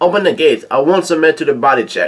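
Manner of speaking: normal talking voice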